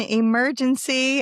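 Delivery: heavy emphasis placed on the word emergency. Podcast host opening an episode, stressing the word emergency. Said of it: "I stress that word".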